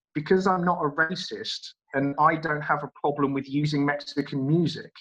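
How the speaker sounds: ordinary delivery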